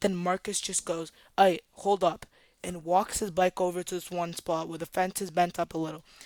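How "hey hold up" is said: normal talking voice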